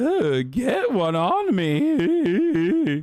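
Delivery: voice cracking, me drawn out. Speaker talks about the community he has cultivated; voice breaking. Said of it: "why is my voice breaking all day today?".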